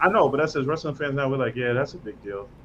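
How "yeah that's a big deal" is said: deadpan, flat, unexcited monotone. Describing how wrestling fans now call something a big deal: mock-flat, no excitement. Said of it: "we're saying it's a big deal, but it's like no excitement in the voice".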